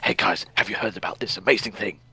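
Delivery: whispery stage-whisper voice. Imitating how another speaker sounds while ill: imitating a whispery voice. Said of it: "you're just very whispery".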